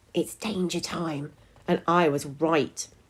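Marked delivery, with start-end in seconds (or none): 0.1-1.3 breathed, hushed half-whisper. Watching a girl shout, the narrator half-whispers to themselves. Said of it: "I whispered to myself".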